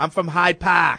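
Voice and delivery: very bad, terrible put-on Boston accent. Retelling being asked where they're from, speaker answers in a bad boston accent. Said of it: "talking in the worst Boston accent ever".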